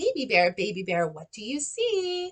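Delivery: rising question-like tune on see. Modeling for teachers how to read a question aloud to kids; rising question intonation. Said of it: "My voice went up because".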